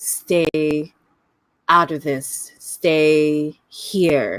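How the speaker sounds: through clenched, gritted teeth, words drawn way out slowly. Narrating a figure who traps an explorer in the walls: half-whispered through gritted teeth. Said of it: "he whispers through gritted teeth".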